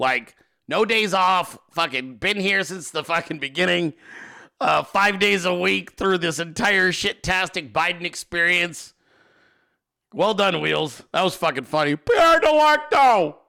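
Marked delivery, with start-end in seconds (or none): 12.0-13.3 shrill, very high, loud shout. Doing his impersonation of how Wheels sounds when he yells: Wheels impression. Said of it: "That's how Wheels sounds when he yells".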